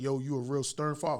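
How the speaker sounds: plain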